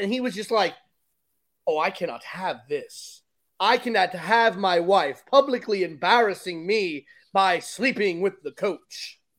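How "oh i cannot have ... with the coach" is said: put-on theatrical, grand, classical old-fashioned stage voice. Retelling how the old husband reacted on finding out, in a Shakespeare voice. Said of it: "you like the Shakespeare voice that he's got going on?".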